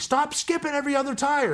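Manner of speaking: very high-pitched, shrill hollering yell. Retelling an obstacle course run, the speaker acts out a guy yelling at him. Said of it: "yelling at me".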